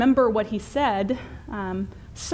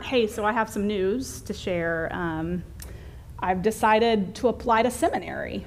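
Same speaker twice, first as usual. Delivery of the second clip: normal talking voice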